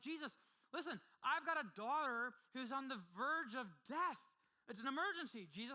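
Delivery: play-acted frantic urgency. Imagining a worried parent begging Jesus for help: acting as anxious, angry Jairus. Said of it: "how anxious or maybe even angry that Jairus".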